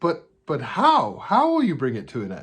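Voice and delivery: put-on bewildered, confused German accent with swooping pitch. Retelling a confused woman's question in a conversation: imitating a German accent. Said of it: "she says in her German accent".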